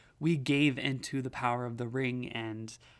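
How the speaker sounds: normal talking voice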